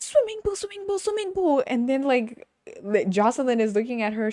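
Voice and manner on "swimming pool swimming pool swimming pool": very high, rushed, giddy, frantic excitement. Retelling a show scene of arriving at a house: imitating Chloe's frantic excitement. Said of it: "super excited, like a baby, like a kid".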